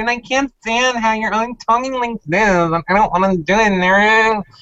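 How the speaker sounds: very high, whiny voice, done badly. Naming your least favorite player in the house, mock her voice with a bad high-pitched whiny Nicole impression. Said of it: "I can't even do her high-pitched whiny correctly".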